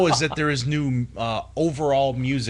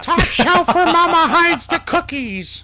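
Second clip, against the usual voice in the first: high, loud, belted sports announcer call; 7 dB louder than usual. Giving a hockey update, doing a Rick Jeanneret impression. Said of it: "I can't do a Rick Jenneret voice, but still, I try".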